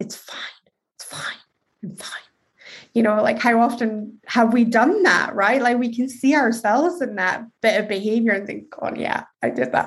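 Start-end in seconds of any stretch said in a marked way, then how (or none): 0.0-2.2 through gritted teeth, much quieter and slower. Showing how people act when secretly angry at others, through gritted teeth. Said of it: "going through gritted teeth".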